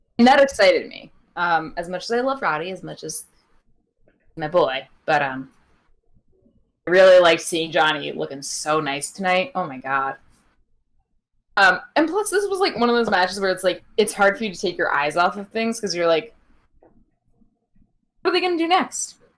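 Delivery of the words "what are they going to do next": high, rushed out as fast as possible. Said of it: "I tried to say it as fast as I could".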